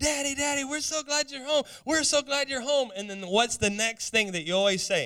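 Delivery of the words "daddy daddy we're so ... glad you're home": put-on high, gushing, excited little-kid voice. Retelling running to the door as children: imitating excited children greeting dad. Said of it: "we were so excited when he would come home".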